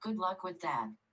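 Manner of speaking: mock-sassy automated navigation voice with attitude. Speaker voices the GPS lady, who has a bit of an attitude; imitating a sassy GPS lady. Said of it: "she has a little bit of an attitude".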